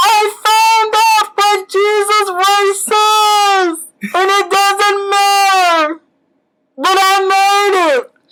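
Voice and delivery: high, slow, loud proclamation yelled from above.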